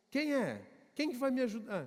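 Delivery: play-acted jumpy, startled voice with swooping pitch. Retelling a story of a man who hears a sudden voice: imitating a startled man. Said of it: "Ele meio que se assusta assim".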